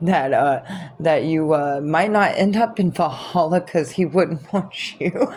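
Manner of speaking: laughing hard.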